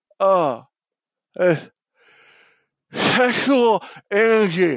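slow, muffled, numb-mouthed mumble, acted. Retelling what a high, numb patient said in the car: imitating a numb, gauze-filled mouth. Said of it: "still full of gauze".

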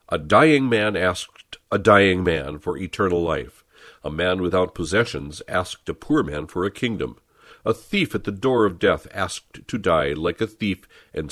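ordinary talk

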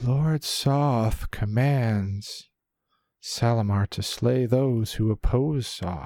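high, hollow, empty-sounding voice. Game master voicing a flaming skeletal swordsman charging a player, hollow voice. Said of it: "you hear this hollowed voice proclaiming".

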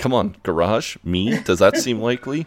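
ordinary talk

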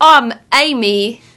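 put-on East London accent. Describing a film, the speaker mimics its lead actress, fake East London accent. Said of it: "almost this like East London mess where she's like".

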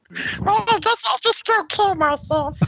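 very high toy puppet voice, pushed way up. Saying a friend's line as asked, in Tickle Me Elmo voice. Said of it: "say something Evan would say as, uh, Tickle Me Elmo".

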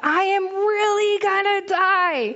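put-on high scream at the top of lungs. Retelling a spinning ride where a child screamed the entire time; imitating a child screaming. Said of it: "she is screaming the entire time at the top of her lungs".

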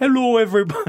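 put-on old-sounding voice, high, strong Canadian accent. Showing how they used to greet everyone: imitating own past Canadian accent. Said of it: "used to say it very Canadian".

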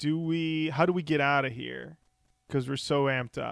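usual speaking voice

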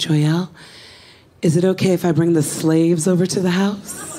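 put-on, sultry, seductive bedroom voice. Quoting what she asked when she first started, imitating a seductive voice. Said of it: "She always spoke in a very seductive voice to me".

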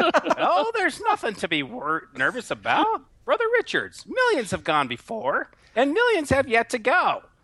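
puppet-like matron voice. A character speaks to Brother Richards, in a matronly Muppet voice. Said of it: "It sounds like the matronly Muppet".

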